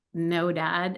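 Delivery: normal talking voice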